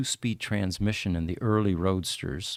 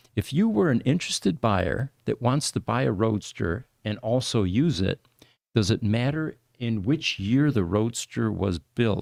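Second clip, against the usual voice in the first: normal talking voice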